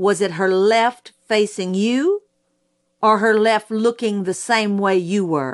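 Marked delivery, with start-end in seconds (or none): none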